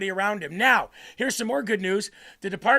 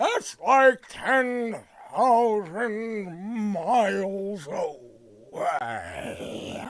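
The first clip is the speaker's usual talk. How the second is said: very slow, every word stretched out. Comparing a movie turtle to a senator: Chuck Grassley impression. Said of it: "That's my senator, Chuck Grassley".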